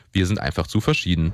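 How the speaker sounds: ordinary delivery, nothing marked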